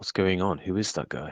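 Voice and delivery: hushed, half-whispered delivery. A narrator voices a man hurrying over to you by the door; half-whisper. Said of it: "he he whispers".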